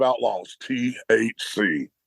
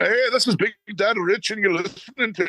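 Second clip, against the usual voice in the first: terrible fake Irish accent, very high-pitched; 10 semitones higher than usual. Opening the show, the host jokingly introduces it in the worst Irish accent ever. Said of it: "The worst Irish accent ever".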